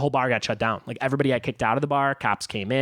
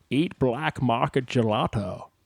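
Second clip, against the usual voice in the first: put-on Scottish accent. Doing a mock promotion for a gelato brand as a Sean Connery impression. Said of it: "This is this is uh, Sean Connery".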